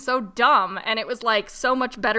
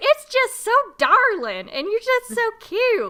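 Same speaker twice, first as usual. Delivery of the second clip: high Southern drawl, put-on, pitched way up; 12 semitones higher, 4 dB louder than usual. Retelling what a southern gas station clerk said: imitating a southern accent. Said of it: "you're so Southern".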